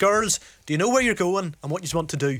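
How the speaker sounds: put-on very broad, laid-on Belfast accent. Act out somebody in a yellow T-shirt approaching women with maps, in a very broad Belfast accent. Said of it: "in a very broad Belfast accent".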